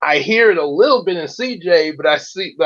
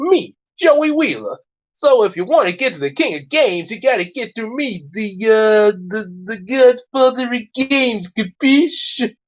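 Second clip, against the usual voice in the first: Brooklyn accent, pitched slightly high; 6 semitones higher than usual. Imitating the English dub voice of Joey Wheeler, in a Brooklyn accent. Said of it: "does sort of a Brooklyn accent".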